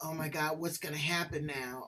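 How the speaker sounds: low, dejected, defeated, downtrodden worried voice. Contrasting a curious question with a worried one, asked downtrodden. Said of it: "you're downtrodden".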